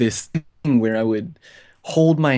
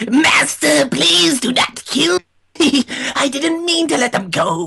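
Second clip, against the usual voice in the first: very high, loud pleading voice; 5 dB louder than usual. Recalling being half bent over their desk, speaker does a Starscream impression. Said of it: "like a good Starscream impression".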